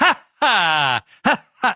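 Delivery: mock, very slow, unconvincing villain laugh. Imitating a wrestler's terrible fake heel laugh: Shane Douglas's fake heel laugh. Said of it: "you don't believe he's really laughing".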